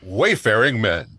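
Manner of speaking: put-on radio or TV announcer voice. Speaker cues David's turn before they record for real: radio TV voice. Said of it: "That was my radio T V voice".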